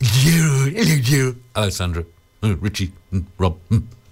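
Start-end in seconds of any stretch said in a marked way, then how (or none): 0.0-0.7 put-on doggy character voice. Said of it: "Can you do that doggy voice".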